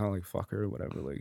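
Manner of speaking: low, very soft mutter under the breath.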